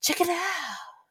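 small, high, breathy voice, breathed out light and soft. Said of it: "that breathy little thing that she does. Check it out. It's something like that".

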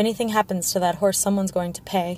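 ordinary delivery

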